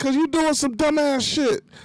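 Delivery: high-pitched yell. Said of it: "I was yelling".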